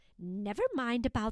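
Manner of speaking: ordinary delivery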